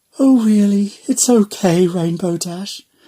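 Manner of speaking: gentle, quiet voice. Reading a story, a pony consoling her friend: very soft voice. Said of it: "soft as the singing of a grasshopper".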